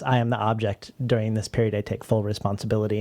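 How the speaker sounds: plain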